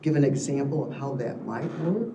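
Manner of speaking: normal talking voice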